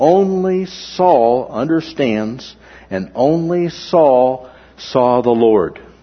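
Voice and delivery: "only" stressed and said slowly.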